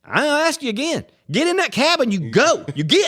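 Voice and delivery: very high, furious, angry voice. Retelling how a friend told off a cab driver: imitating an angry telling-off. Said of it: "but I think you're angry".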